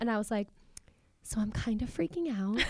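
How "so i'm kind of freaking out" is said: quiet, hushed, confiding whisper. Retelling what was said to the doctor before surgery: imitating a hushed whisper. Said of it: "Did you say it in hushed, whispered tones like that?".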